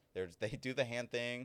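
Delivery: ordinary talk, nothing marked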